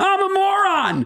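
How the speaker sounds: mock piercing, screeching, high shrill yell. Retelling a woman who ran up to him in a hotel lobby, imitating someone screaming. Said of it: "Screams it".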